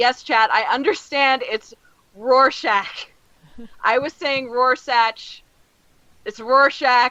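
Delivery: loud shouting. A streamer turns to address the chat, yelling at the chat. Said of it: "I'm gonna yell at the chat".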